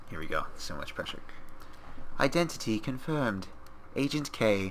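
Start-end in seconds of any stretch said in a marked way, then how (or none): 2.2-4.7 put-on slow, robotic computer voice. Acting out a computer confirming an identity, put-on computer voice. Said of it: "let me do my best computer voice".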